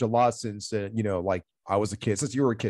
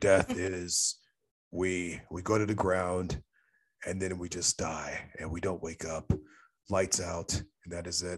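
very dark, bleak speaking voice; 3 semitones lower, 5 dB quieter than usual. Retelling what a panel speaker said about death: imitating a very dark voice. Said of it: "very dark kind of voice when he would speak".

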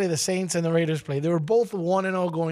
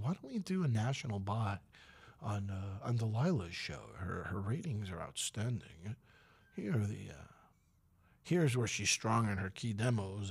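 serious corporate voice, quieter; 8 semitones lower, 11 dB quieter than usual. Recalling pitching a show for a national ad buy, in a serious corporate voice. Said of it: "is that your serious corporate voice".

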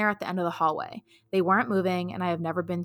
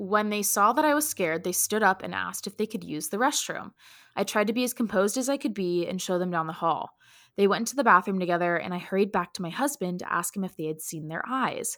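ordinary talk, nothing marked

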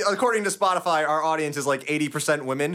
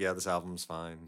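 low, slow, soft bored indifference. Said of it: "me and Nick are just like".

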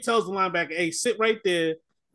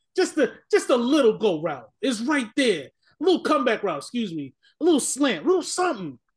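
put-on scream, higher pitch; 4 semitones higher than usual. Retelling watching the game: imitating screaming at the TV. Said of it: "I was watching that game screaming like".

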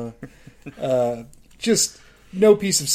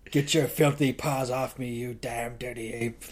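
growling it out, every word; 5 dB quieter than usual. Mocking an actor who growls every single line, imitating a growled line. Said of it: "the way he has to growl".

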